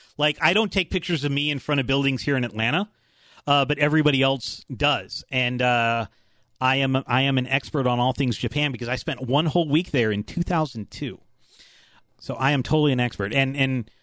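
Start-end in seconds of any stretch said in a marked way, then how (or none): none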